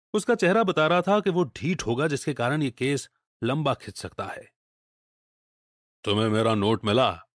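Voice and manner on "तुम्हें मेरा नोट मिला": put-on deep, low voice with German accent. Reading a story aloud, a masked visitor asks about his note: deep German-accented voice. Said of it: "अपने जर्मन लहजे वाली गहरी आवाज में पूछा".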